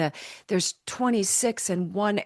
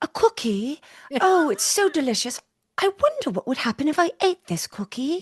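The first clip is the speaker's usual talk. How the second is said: high, put-on English accent; 7 semitones higher than usual. Retelling a performer's stage line: imitating her english accent. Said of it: "she had the English accent".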